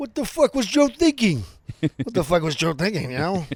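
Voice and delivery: very loud belted rant, swooping up high. Comparing impressions, showing a Harvey Keitel impression. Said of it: "Keitel's like".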